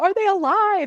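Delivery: shrill, very high screaming. Retelling a TV episode scene where Sam is screaming: imitating Sam screaming. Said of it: "Sam is screaming".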